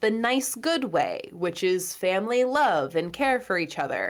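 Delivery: ironic, sarcastic-sounding phrasing. Describing the Weasleys' kind of power as family love: sounding sarcastic. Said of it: "I sound sarcastic when I'm saying that".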